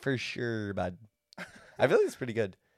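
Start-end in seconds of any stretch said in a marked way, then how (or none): 0.0-1.0 put-on soft, low Canadian accent. Asking a co-host whether it sounds good, trying a canadian accent. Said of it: "Is that a good like Canadian accent?".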